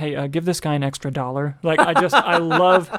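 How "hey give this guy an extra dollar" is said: put-on whisper. Retelling a film scene: imitating Gene Wilder whispering. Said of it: "Gene Wilder just whispers to his assistant".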